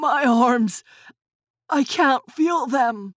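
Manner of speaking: long, slow, drawn-out groaning moan. An injured twin being taken to the hospital; moaning. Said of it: "Nick moaned".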